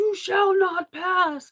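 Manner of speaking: very high-pitched shouting. Describing what they shout when someone tries to enter their room, retelling a yell. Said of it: "I'm yelling out".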